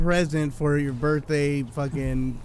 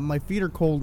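usual speaking voice

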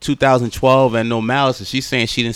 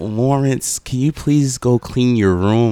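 put-on motherly old-lady voice, faster. Imitating a mother addressing Lawrence, in a motherly old-lady voice. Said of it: "very motherish, very, you know, very old lady".

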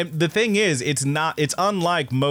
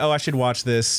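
ordinary delivery

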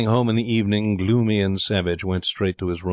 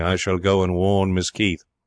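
ordinary delivery

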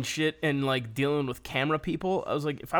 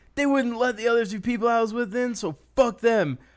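put-on drunken yelling, higher pitched; 8 semitones higher, 3 dB louder than usual. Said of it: "he's drunk as hell, and he's, he's yelling".

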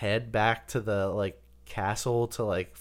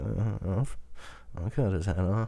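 mock cool, detached, aloof, offhand voice; 2 semitones lower than usual. Retelling what an aloof role-play character would say: aloof character voice. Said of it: "an aloof asshole".

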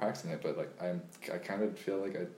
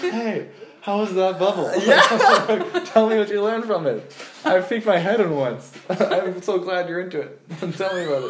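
shrill, very high, very loud, booming voice; 13 semitones higher, 18 dB louder than usual. Imitating a friend greeting people in the hallways: Jason impression. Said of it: "the best Jason impression".

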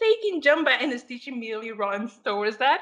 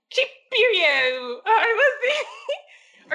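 bad, failed, posh British accent, very slow; 8 semitones higher than usual. Describing a space character who fails at sounding fancy, in a bad fancy British accent. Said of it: "trying to make a British accent, like a fancy accent, but they fail miserably".

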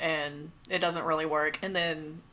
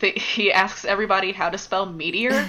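ordinary delivery

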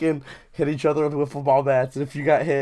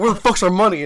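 play-acted, super aggressive, pitched-up voice; 5 semitones higher, 4 dB louder than usual. Retelling a demand for money: retelling an aggressive demand. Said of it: "I said it super aggressively".

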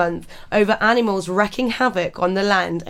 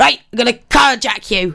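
loud, put-on, swashbuckling pirate voice; 3 semitones higher, 6 dB louder than usual. Telling a story about coked-up boars in italy, voicing a boar in pirate voice. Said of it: "I don't know where you've gone pirate here".

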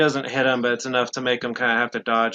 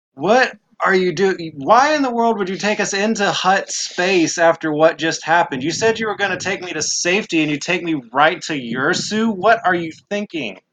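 storming, very angry, pitched-up rant; 6 semitones higher than usual. Voicing a character storming in to scold the crew: furious, storming in. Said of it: "She comes storming in".

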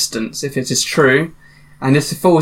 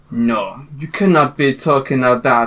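put-on faint hint of a French accent. Storyteller voicing a character in a game, a bit french accent. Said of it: "Sounds a bit French".

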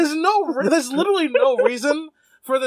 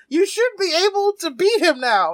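put-on screaming, yelped out, pitched up; 5 semitones higher than usual. Recapping a movie scene, voicing the actress's line: imitating someone screaming. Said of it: "she starts screaming".

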